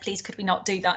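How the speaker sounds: ordinary delivery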